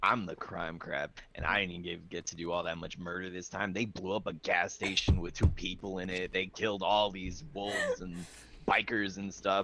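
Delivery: low, soft mutter to oneself under the breath. Recounting how the others got all the kills, the speaker retells muttering under breath. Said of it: "muttering under my breath".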